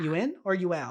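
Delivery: ordinary delivery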